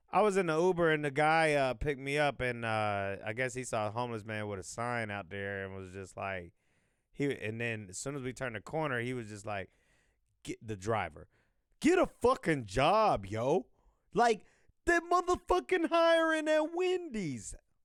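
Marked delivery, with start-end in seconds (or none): 10.4-17.5 very high-pitched, swooping, put-on New York accent. Retelling what an Uber driver shouted at a homeless man, imitating a New York accent. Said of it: "but he was from New York".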